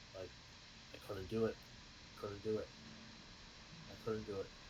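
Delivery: soft, half-swallowed mutter under the breath. While tugging at something, a character keeps muttering under breath. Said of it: "I'm just saying under my breath".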